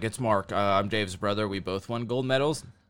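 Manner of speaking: acted timid, sheepish, halting delivery. Retelling a movie scene at the front desk, imitating Mark Schultz sheepishly. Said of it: "really sheepishly".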